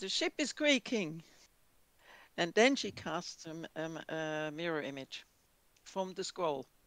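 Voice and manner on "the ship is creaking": screaming, called out at full voice. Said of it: "she screams out".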